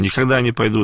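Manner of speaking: normal talking voice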